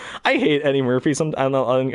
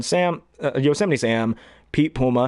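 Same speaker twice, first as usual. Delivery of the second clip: ordinary delivery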